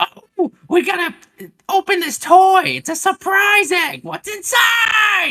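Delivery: overexcited screaming, very high, shrill and very loud. Speaker mocks a family-vlog dad forcing his kids to make content; imitating a dad screaming. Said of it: "he's like screaming at them".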